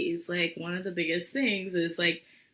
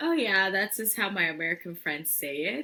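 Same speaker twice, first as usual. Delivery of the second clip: normal talking voice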